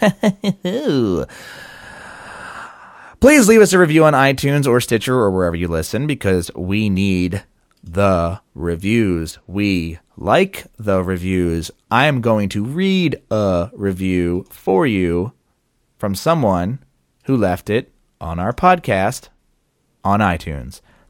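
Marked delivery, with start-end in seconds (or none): 6.1-20.8 deliberately slow, low, drawn-out voice. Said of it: "The reason I'm talking so slow".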